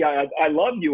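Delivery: ordinary delivery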